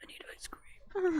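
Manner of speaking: hoarse, breathy, pleading whisper. Retelling speaking right after having tonsils out, in a hoarse whisper. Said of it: "I was literally like whispered talking".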